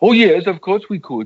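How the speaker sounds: high, loud, sing-song Swedish-like lilt.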